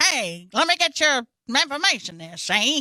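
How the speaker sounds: put-on old-fashioned, old-timey newspaper reporter voice. Describing an actor's recent role, the speaker quotes it in an old-timey reporter voice. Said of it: "An old-timey reporter saying".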